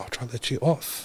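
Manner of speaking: quiet, hushed, soft whisper. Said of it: "he's trying to whisper it to me".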